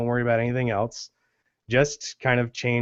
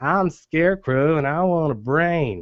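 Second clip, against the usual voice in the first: slight lisp with a Southern accent; 4 semitones higher, 3 dB louder than usual. Showing the voices made up for the characters, the speaker does a lisping Southern Scarecrow voice. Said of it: "he talks like this, ... lispiness, but also the southern part".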